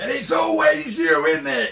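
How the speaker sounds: high, loud, rising shout. Retelling what a lad shouted while stomping off, imitating someone shouting. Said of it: "I think he was shouting things like".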